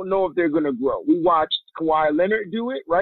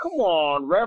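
mock aggrieved whine, just short of crying. Describing a player's reaction to the referees, imitating Tatum's whine. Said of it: "it's not like he's crying, but it's like a whine".

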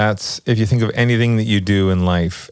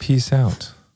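put-on, really calm voice; 3 semitones higher than usual. Signing off at the end of the episode: put-on really calm voice. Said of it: "That was me trying to be really calm".

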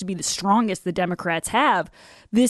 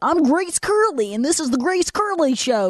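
high, squeaky little cartoon-mouse voice; 6 semitones higher than usual. Doing her sister's imitation of her show intro: squeaky cartoon-mouse voice. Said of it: "it sounds like Mickey Mouse or something".

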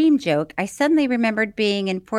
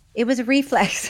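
ordinary delivery

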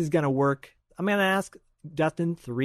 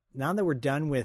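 ordinary delivery

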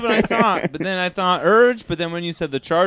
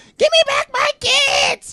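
mock screaming, higher and louder; 4 dB louder than usual. Posing a riddle about a figure screaming, acting out screaming. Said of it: "screaming at the top of their lungs".

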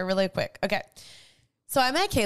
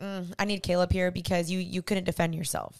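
ordinary talk, nothing marked

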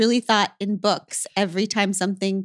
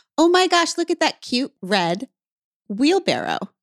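acted, loud, high, animated sing-song exclamation; 6 semitones higher than usual. Retelling a drive, quoting one of the girls in the back seat, loudly. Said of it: "One of the girls says loudly".

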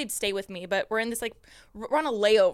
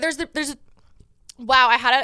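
stuttering, tripping over words, higher and louder; 3 semitones higher, 9 dB louder than usual. Starting to explain a trend after an energy drink, stuttering. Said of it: "I'm stuttering over every fucking word".

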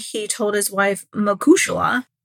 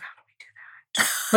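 hushed, whispered murmur among several voices. Retelling what the members whispered to each other: imitating people whispering. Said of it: "whispering to each other".

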